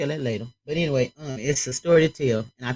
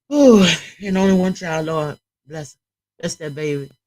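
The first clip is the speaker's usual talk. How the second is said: raised voice, struggling not to cry; 3 semitones higher, 7 dB louder than usual. Reacting to a story of a murdered cousin, holding back tears. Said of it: "I'm trying not to cry".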